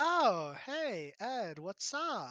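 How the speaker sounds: put-on exasperated, swooping Valley Girl voice. Voicing a female character greeting Ed, in exasperated Valley Girl voice. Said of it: "kind of like exasperated Valley Girl".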